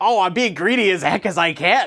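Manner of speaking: put-on impish voice. Explaining greedy choices in a lesson, voicing the greedy thought in an impish voice. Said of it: "I'm sort of devolving into like an imp here".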